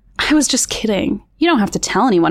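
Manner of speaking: ordinary delivery, nothing marked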